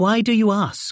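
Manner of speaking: suspicious, wary tone. Narrator reads a woman asked by a stranger about a family; suspicious. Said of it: "she said suspiciously".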